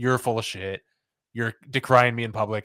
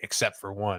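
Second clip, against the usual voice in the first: mock muttering under the breath, quieter; 5 dB quieter than usual. Retelling a remark from a big speech, imitating someone muttering under breath. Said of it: "under her breath".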